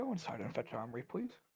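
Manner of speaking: quiet, soft, hushed half-whisper. A guard in a narrated scene tells a servant to fetch someone, half-whispering. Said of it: "she whispers to him".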